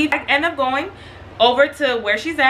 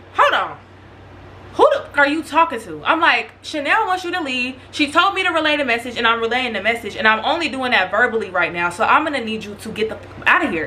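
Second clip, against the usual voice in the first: plain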